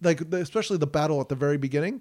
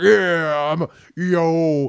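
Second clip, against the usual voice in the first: mock deep macho voice, louder; 7 dB louder than usual. Imitating a celebrity who jokingly played a macho guy: imitating a deep macho voice. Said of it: "said "yo" a lot, like, in a deep voice".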